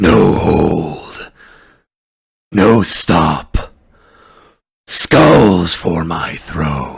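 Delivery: very loud, deep, slow, low rumbling grumble. Narrating to a player, voicing an unseen figure on the left in a low grumbling voice. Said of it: "a low, grumbling voice".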